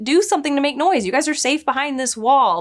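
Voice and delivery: high-pitched, urgent, pleading tone.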